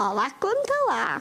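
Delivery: wobbly mock old lady voice.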